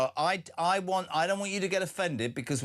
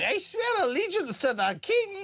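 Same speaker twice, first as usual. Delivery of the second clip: high, slow mock Scottish accent. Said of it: "pitched up in the Commons going".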